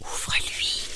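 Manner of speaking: with a sigh. Reading a story: Setare, ill in bed, tells her father to open; sighed. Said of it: "soupire Setare".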